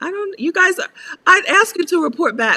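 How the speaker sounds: very high-pitched, loud shouting. The host asks listeners to report back, yelling. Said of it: "I'm sorry for sh- for yelling".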